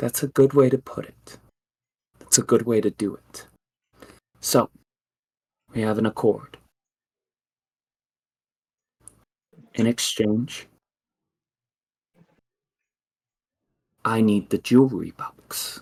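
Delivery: spirit-like voice like fallen leaves. A spirit strikes a deal inside the player's mind, in a voice like fallen leaves. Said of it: "She says, / and you hear inside your mind a voice like fallen leaves, / and you hear inside your mind a voice like fallen leaves".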